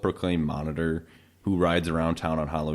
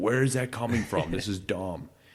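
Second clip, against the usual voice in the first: play-acted exasperated, fed-up yelling outburst; 3 semitones higher than usual. Retelling yelling at the TV during a silly movie gag: imitating own yelling at the TV. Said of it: "yelling at the T V".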